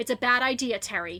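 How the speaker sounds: firm, stern tone. Speaking to a prisoner facing trial, putting on a stern voice. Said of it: "time for my stern voice".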